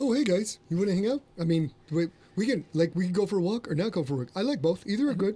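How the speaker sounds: sweet, gentle, eager little puppy voice. Showing the others how the dog Reese sounds, in Reese's voice. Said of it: "And she sounds like this".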